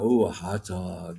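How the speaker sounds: very low, slow, drawn-out tempted craving. Retelling passing the hot dog stand: imitating his own tempted self. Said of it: "And I'm going".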